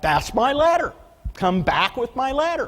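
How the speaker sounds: shrill, very high, rising yell. Retelling a yell at a worker walking off with the ladder: retelling a yell. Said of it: "I yelled at him".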